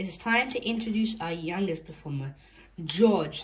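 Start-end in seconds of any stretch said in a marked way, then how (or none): none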